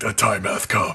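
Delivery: silly, exaggerated, over-deep put-on voice. Quoting what the cat says, in an exaggerated deep voice. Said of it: "in like stupid deep voice".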